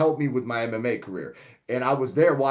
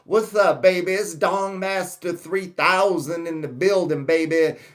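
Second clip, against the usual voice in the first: put-on character voice with lisp, higher; 5 semitones higher than usual. Showing how the character Dong Master speaks: Dong Master 3000 voice with Dusty Rhodes lisp. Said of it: "I got that lisp and that cadence from Dusty Rhodes".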